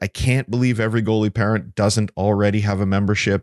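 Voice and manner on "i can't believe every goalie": plain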